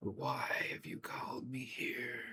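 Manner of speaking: soft, ghostly whisper floating on the air. Narrator voicing a soul risen from its body, asking why: whisper in the air. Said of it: "you hear a whisper in the air".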